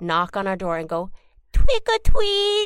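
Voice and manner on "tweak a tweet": tiny cute voice, much higher. Retelling a voice at the door while she and her sister hid: cutest, tiniest little voice. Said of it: "the cutest, tiniest little voice".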